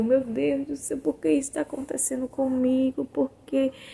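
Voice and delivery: high, tearful, sobbing, desperate voice. Retelling pleading in pain with no medication: imitating herself crying. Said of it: "E eu chorando".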